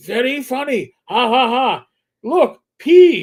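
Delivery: very loud, very slow bad Chinese American accent. Imitating a street seller on the Manhattan train: bad Chinese American accent. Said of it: "forgive me for my bad, uh, Chinese American accent".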